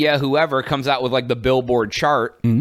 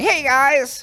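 very high, soothing, gentle voice; 12 semitones higher than usual. Imitating a YouTuber's greeting: Northern Lion impression. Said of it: "he's all just like".

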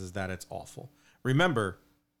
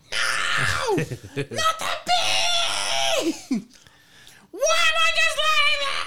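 very high, shrill angry scream, climbing higher; 6 dB louder than usual. Recalling a comedy sketch where a firefighter hears bad news, mock-screaming like Bill Hader's firefighter. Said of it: "And he's just screaming it out".

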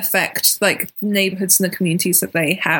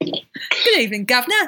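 put-on English accent from Britain. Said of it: "that was a British accent".

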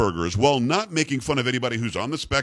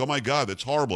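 usual speaking voice

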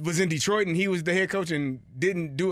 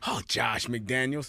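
put-on excited voice, much lower pitch; 6 semitones lower, 4 dB quieter than usual. Co-hosts role-play asking Bill Belichick about his coordinator; overexcited Bill Belichick impression. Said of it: "that was way too excited".

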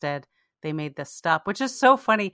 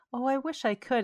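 put-on sweet voice, higher and quieter; 6 semitones higher, 5 dB quieter than usual. Recalling a line Janeway said to the cadets: imitating Janeway's sweet voice. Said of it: "in, like, this very sweet voice".

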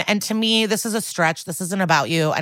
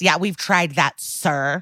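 put-on smug delivery. Retelling what the dad says on the show: imitating a smug reply. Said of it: "Again, smug".

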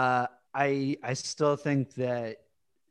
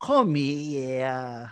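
put-on New York accent. Quoting a weird line from the episode: Christopher's fake New York accent. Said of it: "act with a New York accent".

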